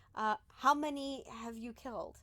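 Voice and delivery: gentle, comforting, soothing, reassuring voice. Acting out a question put to someone who kills people, in a soothing, reassuring voice. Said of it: "read in a soothing, reassuring voice".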